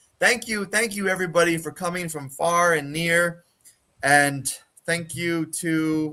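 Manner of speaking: weary, tired voice with forced cheer. Brennar, exhausted, addresses the crowd, exhausted, forced happy tone. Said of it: "tries to put on a happy face".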